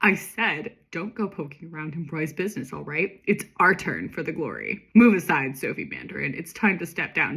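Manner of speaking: ordinary delivery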